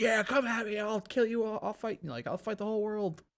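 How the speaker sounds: big, gruff tough-guy voice full of bravado. Describing the character Knuckles from the series, big Knuckles voice. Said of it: "like big voice".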